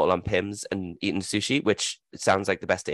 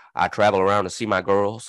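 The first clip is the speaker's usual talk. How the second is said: put-on deep Southern accent; 4 dB louder than usual. Retelling meeting a woman who travels to see Venus and Serena, imitating a deep South accent. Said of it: "she had like a deep South accent".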